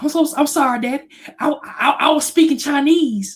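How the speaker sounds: put-on very high, frightened, scared stammering voice. Retelling a childhood scolding from his dad, imitating his scared younger self. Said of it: "I was scared as hell".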